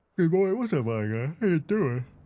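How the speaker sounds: talking through a yawn. Greeting the boy, talking through a yawn mid-hello. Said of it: "I yawned right as I was saying".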